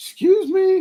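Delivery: tiny, high-pitched voice.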